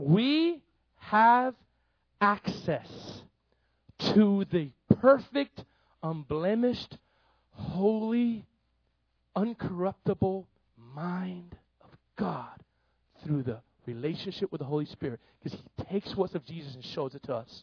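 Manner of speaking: slow, deliberate delivery, each word laid out carefully. Preacher repeating a point for listeners who are puzzled, saying it slowly. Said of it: "I'm going to say it slowly".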